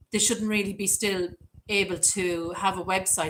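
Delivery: ordinary delivery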